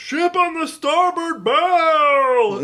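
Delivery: high, slow cartoon yell with "bow" drawn out. Explaining why a game cutscene is funny, yelling like Goofy. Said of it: "he just yells".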